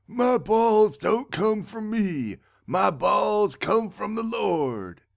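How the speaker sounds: put-on really raspy elderly old-man voice, high and very slow. Dumbledore, in prison, answers a remark about his balls in a raspy old man Dumbledore voice. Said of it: "And then we're back to [name] in prison. / [name] in his really raspy old man voice is all like, / [name] in his really raspy old man voice is all like, / [name] in his really raspy old man voice is a".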